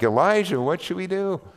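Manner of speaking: acted high, frantic, alarmed, panicked voice. Retelling how a servant sees an enemy army: imitating a panicking servant. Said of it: "he's panicking. He's like".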